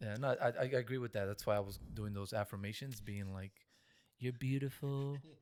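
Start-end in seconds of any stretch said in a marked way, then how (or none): 4.2-5.2 higher-pitched, put-on, mock creepy voice. Acting out past self-affirmations to friends: put-on creepy voice. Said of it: "that was a creepy voice".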